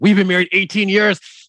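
very high-pitched voice. Imitating a frugalista's partner: imitating Casey. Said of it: "That was a good impression of Casey".

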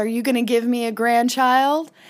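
ordinary delivery

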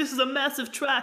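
clumsy, bad, put-on British accent. Recapping a show, quoting what Mick would say, bad Mick impression, British accent. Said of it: "That's a really bad accent".

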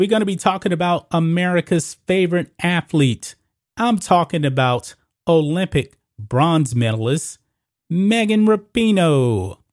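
very heavy, dripping sarcasm. Host of a sports YouTube show introducing the day's athlete to fans, very sarcastic. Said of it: "I'm being very sarcastic".

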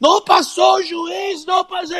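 play-acted wailing scream, very high and drawn-out. Fighter retelling an opponent's brother screaming from the sideline at the referee, imitating a screaming brother. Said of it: "he started screaming".

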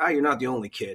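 ordinary talk

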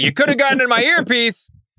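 high-pitched, indignant announcer voice. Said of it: "you know, just like".

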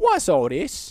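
put-on British accent in sports commentator style. Coaching Josh on what to say when commentating, in a British accent. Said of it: "if you have to commentate it in a British accent".

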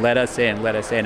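ordinary talk, nothing marked

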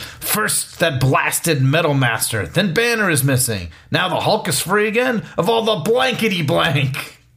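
play-acted high, rising, fuming, exasperated rant. Acting out a comic book character's line: Thunderbolt Ross screaming. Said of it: "he screams".

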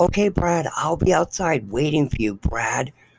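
mock yelling, loud and called out. Speaker retelling how a woman called out to him as they left, retelling someone yelling out. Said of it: "She yells out".

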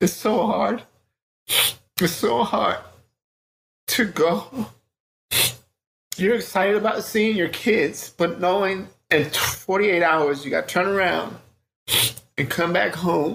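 crying, tearful voice breaking through the words. Telling how hard it is to leave the kids again; crying, voice breaking. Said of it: "I know I'm crying".

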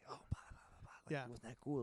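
whispering. Acting out leaning over to a friend during a movie: whispering. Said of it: "and I'll whisper".

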